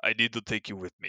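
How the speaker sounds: soft, bad French accent slipping into Russian. Retelling a story, voicing the french guy who grabs the salesman: bad russian accent. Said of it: "that was a horrible French accent. I don't know why I went Russian".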